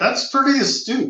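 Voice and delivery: high-pitched, proud, wry teasing tone. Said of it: "You say that proudly?".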